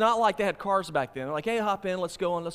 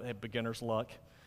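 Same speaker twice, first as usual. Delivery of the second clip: put-on muttering under breath, lower and quieter; 8 semitones lower, 9 dB quieter than usual. Telling a joke, voicing an elderly man at another's catch: imitating a mumble under the breath. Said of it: "under his breath, he just sort of mum-, mumbles".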